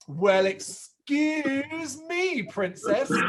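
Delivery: very slow, high, sarcastic, stretched-out drawl. Retelling a cartoon's running joke, doing Link's sarcastic catchphrase: imitating Link's sarcastic catchphrase. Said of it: "I'm gonna give it my best shot".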